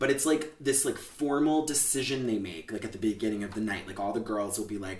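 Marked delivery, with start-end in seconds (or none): none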